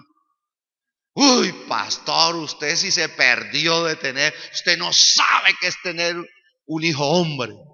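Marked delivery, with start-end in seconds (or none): 1.1-7.5 louder, mocking, teasing, boastful tone. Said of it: "me chicaneaba a mí".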